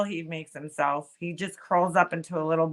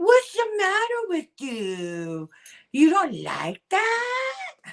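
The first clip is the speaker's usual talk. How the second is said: put-on very high, swooping, sing-song baby talk; 13 semitones higher than usual. Imitating a friend heard live last night: mocking baby talk, imitating Laura. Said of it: "she talks like a baby".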